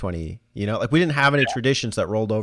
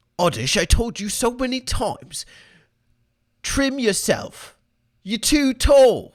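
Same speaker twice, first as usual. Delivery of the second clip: very high-pitched scolding, berating rant; 13 semitones higher than usual. Speaking to Oddish in a joking bit, Gordon Ramsay voice. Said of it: "why you sound like Gordon Ramsay?".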